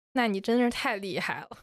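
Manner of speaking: normal talking voice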